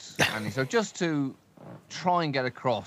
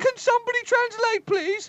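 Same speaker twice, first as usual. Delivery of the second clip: very high, shrill, loud, lofty put-on voice; 6 dB louder than usual. Imagining the Queen answering a guest: Queen impression. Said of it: "Are you doing an impression show".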